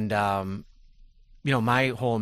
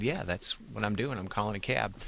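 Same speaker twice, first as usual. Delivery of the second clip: ordinary talk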